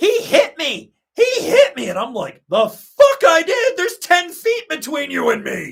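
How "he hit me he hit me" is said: mock accusing scream, high and drawn out. Retelling a woman at the ski lift accusing him, imitating someone screaming. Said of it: "she starts screaming".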